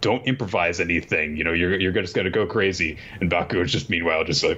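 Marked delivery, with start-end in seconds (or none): none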